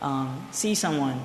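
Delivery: slow, deliberate, unhurried delivery.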